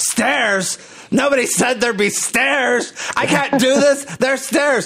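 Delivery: very high, screeching, screaming outcry. Speaker recalls a woman booked for their Chicago show facing stairs, imitating her screaming. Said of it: "she just screamed like".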